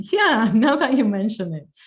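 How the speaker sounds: chuckling through the words. Speaker responds to someone's comment, chuckling.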